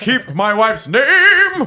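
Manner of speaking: loud, projected theatrical yell, one word drawn out. Imitating the yelled line just discussed: imitating a theatrical movie yell. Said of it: "total movie yell".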